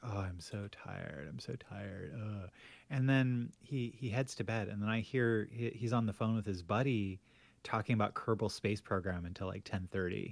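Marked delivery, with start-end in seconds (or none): 0.0-2.5 mock slow, soft, drawn-out, worn-out complaining moan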